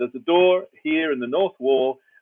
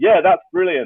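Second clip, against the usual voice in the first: put-on bright, raised, relentlessly upbeat, eager super-positive gush; 5 semitones higher, 5 dB louder than usual. Retelling how Claude answers: imitating super positive Claude. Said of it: "He's so super positive".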